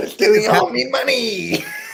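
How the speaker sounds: creaky, high-pitched character voice.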